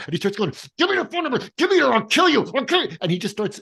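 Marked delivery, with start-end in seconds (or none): 0.8-3.0 mock shrill, very high, enraged, furious tone. Retelling a movie scene, imitating Barry full of anger. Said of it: "he's so full of anger".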